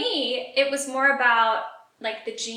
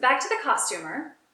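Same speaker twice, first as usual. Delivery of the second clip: ordinary talk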